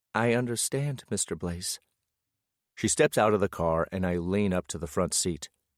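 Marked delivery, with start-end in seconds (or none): 0.1-1.8 meekest, most timid, very timid voice. Reading a story aloud, a character repeats a line back: very timid voice. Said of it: "In the most timid voice I've ever heard from her".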